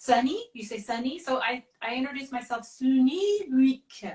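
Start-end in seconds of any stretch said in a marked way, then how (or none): 2.7-4.2 words drawn out slowly in a French accent. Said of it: "I have to say my name with a French accent".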